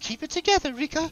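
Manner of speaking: very high, flustered, embarrassed voice. Voicing a shopkeeper realizing the customers are together: flustered and embarrassed. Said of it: "starts fanning herself and she says".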